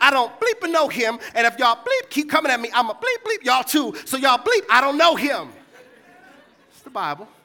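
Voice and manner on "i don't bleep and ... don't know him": mock angry, loud, sing-song bleeped cursing. Retelling Peter's denial to those accusing him: imitating angry cursing. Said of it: "Read the Bible and start cursing".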